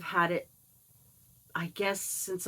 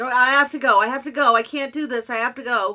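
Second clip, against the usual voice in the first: desperate, frantic, loud, higher. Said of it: "I'll be like".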